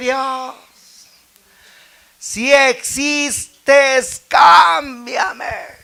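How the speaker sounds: acted-out shouting. Retelling crying out to god in the street, retelling a shouted plea. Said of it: "grité y le dije".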